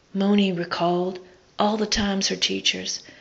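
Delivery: plain reading voice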